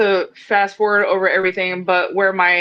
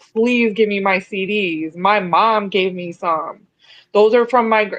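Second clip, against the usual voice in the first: mock pleading voice while crying. Retelling begging a man's girlfriend for their CDs back, imitating tearful begging. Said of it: "I was trying to beg and plead".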